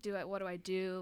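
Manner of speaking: very quiet, hushed, slow murmur. Retelling how Walker acted at a photo shoot: imitating Walker being very quiet. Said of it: "very quiet and was just like".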